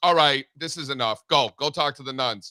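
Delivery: ordinary delivery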